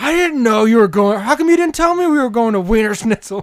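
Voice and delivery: mock yelling, loud screaming. Retelling a phone call from someone screaming at them: imitating someone screaming. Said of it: "phone call from somebody screaming at us".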